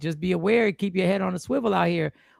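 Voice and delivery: ordinary talk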